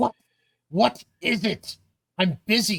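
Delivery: put-on curt, brusque, terse older woman's voice. Game narrator voicing the character who answers the party: terse older female voice. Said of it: "sounds like an older female voice saying".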